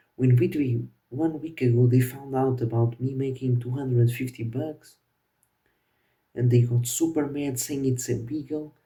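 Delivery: ordinary talk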